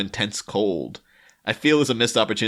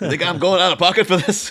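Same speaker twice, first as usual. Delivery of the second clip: loud, high-pitched mocking tone. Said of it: "and she's like".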